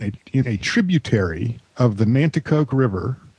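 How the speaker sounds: ordinary talk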